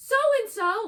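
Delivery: acted-out shout. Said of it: "shouts her brother's name".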